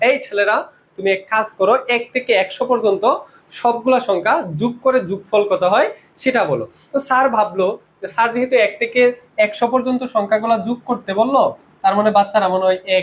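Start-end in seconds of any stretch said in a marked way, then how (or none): none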